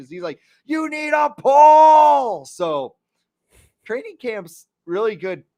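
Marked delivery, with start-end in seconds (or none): 0.6-2.4 shrill, very high, very loud, very slow screaming yell. Retelling a training camp fan heckling a player: imitating a heckler screaming. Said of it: "he's just screaming at him".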